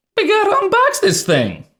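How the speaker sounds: squeaky, very high voice crack. Presenting an ipad unboxing to viewers, voice cracking. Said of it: "Why did my voice crack".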